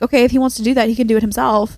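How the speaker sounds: normal talking voice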